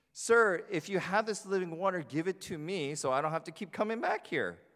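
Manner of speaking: dry sarcastic tone. Acting out a scripture character's reply: acting out a sarcastic remark. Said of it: "Did you catch the sarcasm?".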